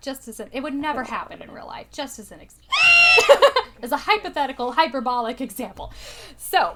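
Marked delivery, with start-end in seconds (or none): 1.9-4.7 high, loud, throat-straining, mock-emphatic yelp. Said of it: "that was an interesting sound".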